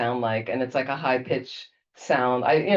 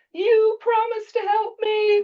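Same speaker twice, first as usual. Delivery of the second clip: acted-out very high, drawn-out scream; 4 dB louder than usual. Retelling a friend's cry to Lama Tsongkhapa: imitating someone screaming. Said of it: "I was screaming".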